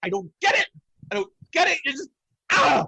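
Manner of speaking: very high-pitched, exasperated, frustrated knight voice. Voicing a knight who slams his sword into the ground: frustrated knight voice. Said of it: "He just slams his sword into the ground. He just goes".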